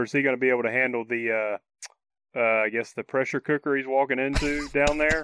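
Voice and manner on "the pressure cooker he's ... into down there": normal talking voice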